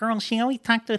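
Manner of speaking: very high, squeaky mouse voice.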